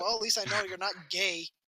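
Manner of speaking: ordinary talk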